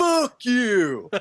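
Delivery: enraged, very high, loud furious shout in Texas drawl. Retelling a man in a clip turning on someone who yelled shut up, mock rage. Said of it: "with the utmost conviction and rage".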